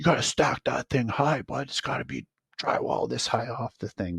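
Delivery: put-on bawling yell, high-pitched. Recalling a job where the boss yelled about stacking drywall, retelling boss yelling. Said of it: "he's yelling at me like".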